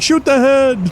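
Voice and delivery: mock scream, high-pitched and urgent. Retelling what Baron shouts during the fight: imitating Baron screaming. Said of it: "Baron's, like, screaming".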